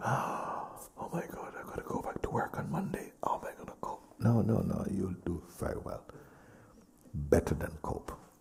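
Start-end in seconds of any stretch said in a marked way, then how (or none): 0.0-4.0 put-on anxious, breathy, panicked, worried whisper. Imitating someone afraid of returning to work: imitating a fearful worry. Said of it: "Is there fear that you".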